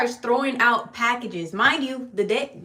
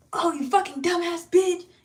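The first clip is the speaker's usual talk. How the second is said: mock hot-headed, loud, furious grunting scream; 7 semitones higher than usual. Retelling how a grumpy delivery driver reacted to missed packages: imitating an angry driver screaming. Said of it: "he'll be screaming".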